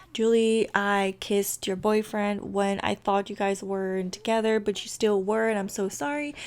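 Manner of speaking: ordinary delivery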